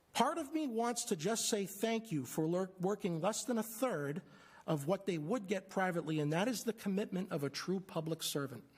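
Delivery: ordinary talk, nothing marked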